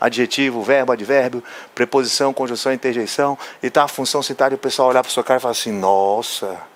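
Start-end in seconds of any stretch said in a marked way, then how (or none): 5.7-6.6 weighty, heavy, sarcastic, ironic nossa. Imitating people reacting to a list of word classes, mock-impressed ironic 'nossa'. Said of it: "esse nossa aí com esse tom pesado não tem nada a ver de admiração, na verdade é uma ironia".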